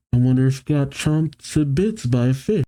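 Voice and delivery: ordinary talk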